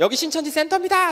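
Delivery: shrill, very high, loud yell. Describing a one-person protest in front of a Shincheonji center, retelling a protest shout. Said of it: "소리 지르는 거예요".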